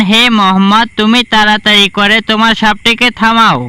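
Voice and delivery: ordinary delivery, nothing marked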